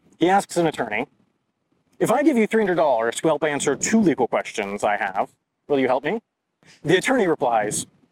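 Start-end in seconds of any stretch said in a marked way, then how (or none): none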